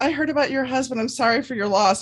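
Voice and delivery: loud, high-pitched voice. Retelling what a woman said across a parking lot, imitating loud talking. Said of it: "saying this really loud in the parking lot".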